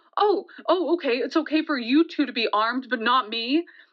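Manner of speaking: ordinary talk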